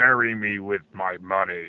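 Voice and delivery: every word dragged out slowly. Quoting the first boss of Sunset Riders when killed: imitating the boss's voice. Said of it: "Now that you do that voice".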